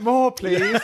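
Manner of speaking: high, laughing, pleading voice with a London street-urchin quality.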